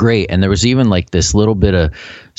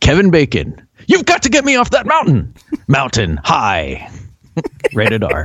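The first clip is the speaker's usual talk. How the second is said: put-on movie trailer announcer voice, higher; 6 semitones higher than usual. Retelling a scene where Kramer does fake previews on Movie Phone: Kramer's fake Moviefone preview voice. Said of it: "he's doing fake, you know, previews on Movie Phone".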